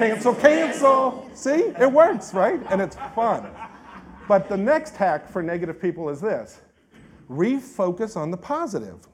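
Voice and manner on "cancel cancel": loud, high, goofy Southern drawl, laid on thick. Leading the audience on the count of three, in a Gomer Pyle Southern accent. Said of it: "in that kind of Gomer Pyle Southern accent".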